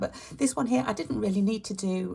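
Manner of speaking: slightly croaky, croaking voice. Mid-explanation, speaking with a bit croaky voice. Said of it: "sorry, my voice got a bit croaky".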